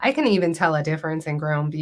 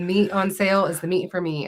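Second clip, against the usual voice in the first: plain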